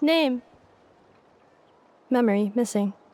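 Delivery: flat, monotone robot voice. Voicing a robot delivering a message: monotone robot voice. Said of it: "she keeps monotone with her voice acting".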